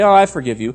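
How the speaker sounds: low, offhand, flippant tone. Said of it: "don't just flippantly say".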